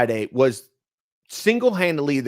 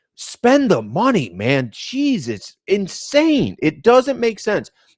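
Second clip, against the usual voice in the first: worked-up, exasperated, fired-up rant, pitched high; 8 semitones higher than usual. Ranting that a baseball team should spend the money, fired up. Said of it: "I'm getting fired up".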